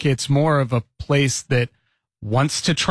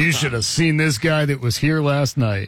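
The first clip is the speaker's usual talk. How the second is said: ordinary talk, nothing marked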